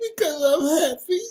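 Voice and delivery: high voice, laughing through the words.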